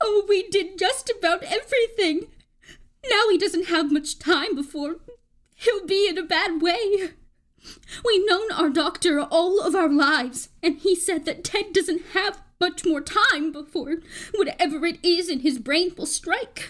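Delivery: speaking through tears. A woman who has begun to cry tells the narrator about her husband's illness, tearful. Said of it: "but coming from such a sweet old lady, / but coming from such a sweet old lady, / you'll find you're pushing 72".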